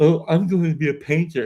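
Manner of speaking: high, teasing, self-mocking tone. Retelling how painting began at first: imitating own mocking tone. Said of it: "almost like a mocking way".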